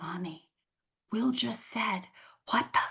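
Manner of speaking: put-on whispered, little-kid voice. Retelling a three-year-old daughter telling on her brother: imitating a child whispering. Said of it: "she whispers to me".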